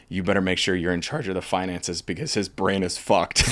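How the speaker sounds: ordinary delivery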